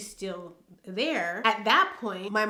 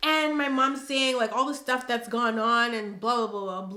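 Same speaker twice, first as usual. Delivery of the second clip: ordinary delivery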